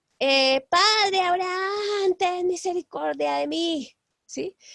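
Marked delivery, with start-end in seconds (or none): 0.7-3.9 high calling-out shout, sounding far off. Speaker retells a man crying out to Father Abraham, retelling a shout. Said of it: "empieza a gritar desde allá".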